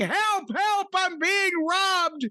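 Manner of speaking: mock screaming, high and drawn-out, distressed. Speaker describes a wife being robbed while someone listens to music: imitating her screaming for help. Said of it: "But if she's screaming".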